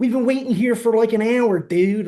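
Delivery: put-on loud, high, fed-up, griping Philadelphia accent. Speaker quoting a complaining woman on the bus, in Philly accent. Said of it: "that Philly accent".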